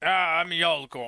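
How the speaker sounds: big, gruff man's voice. Getting back into a character's voice, the speaker introduces the character: Yalgor voice. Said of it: "there's the voice".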